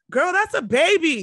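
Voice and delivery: put-on very high shriek with "baby" stretched out. Recounting what she said back then, retelling a scream. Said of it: "Like I just screamed that".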